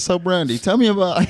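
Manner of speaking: acted confident voice. Retelling calling a guest by the wrong name: imitating own confident line. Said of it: "I said it with confidence".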